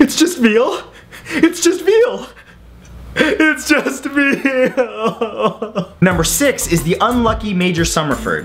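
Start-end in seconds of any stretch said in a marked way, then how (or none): 0.0-5.9 high, very slow, drawn-out weeping. Imagining having to eat another human, speaker acts it out: mock sobbing.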